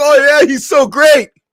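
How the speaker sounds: very high, slow, drawn-out, sarcastic, fawning gush. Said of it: "you brothers and sisters are like".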